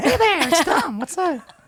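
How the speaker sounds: very high, creepy voice.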